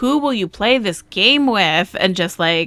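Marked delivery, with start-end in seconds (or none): 0.0-2.0 shouted out loud. Retelling asking a partner about buying a game: imitating own past shouting. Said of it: "shouting at you".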